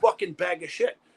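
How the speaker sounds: all-out, furious, raging scream. Telling a story, the speaker re-enacts screaming at a man who insulted his daughter, a furious scream. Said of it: "I fucking started screaming at her".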